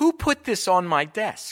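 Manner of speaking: booming, very loud, high-pitched shrill bellow. Speaker retells finding unwanted mail on their desk: retelling a bellow. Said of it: "and I bellowed".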